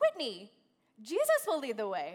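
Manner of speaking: loud, confident, self-assured sing-song voice. Retelling the translator's answer about the way: imitating someone speaking confidently. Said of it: "confidently says".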